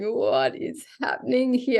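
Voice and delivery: mock tearful, high crying delivery. Speaker recounts visiting a person, acting out their past self: retelling crying. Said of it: "I was like crying, just going".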